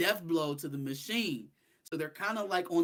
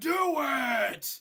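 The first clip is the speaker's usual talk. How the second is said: loud high scream with "it" drawn out; 8 semitones higher, 4 dB louder than usual. Retelling a scene from a comic, imitating someone screaming. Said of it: "he just screaming at him like".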